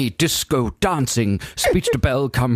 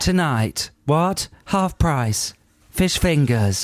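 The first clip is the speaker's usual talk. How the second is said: mocking, bored, sultry voice, pitched higher; 4 semitones higher than usual. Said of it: "The sexy bored one".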